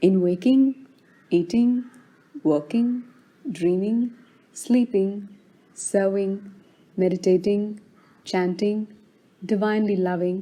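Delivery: plain reading voice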